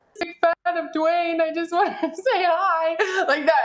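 high, tearful crying, hi drawn out long. Speaker retells introducing herself as a big fan, retelling crying while speaking. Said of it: "and I'm crying and I'm just like".

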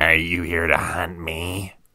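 twisted, unnatural, distorted, warped monster voice. A creature with a newly formed mouth questions its hunter, in a distorted high-pitched voice. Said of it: "the thing asked in a distorted, high-pitched voice".

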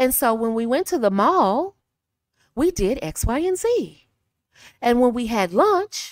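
rising tune on X, Y, and Z. Speaker showing listeners how to end sentences when talking, rising at sentence ends. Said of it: "at the end of your sentence, go up".

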